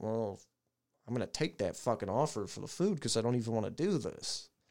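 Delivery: mock exasperated, frustrated, fed-up giving-in tone. Telling of a long day driving a guy home, retelling speaking out of frustration. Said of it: "And out of frustration".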